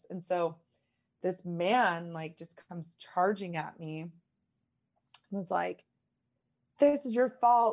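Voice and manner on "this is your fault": shrill, very loud screaming. Retelling a man charging at the speaker: imitating a man screaming.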